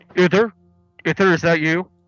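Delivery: rough, gruff, very loud calling out. Game narrator voicing someone calling from the other side: gruff voice. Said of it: "you hear a gruff voice say".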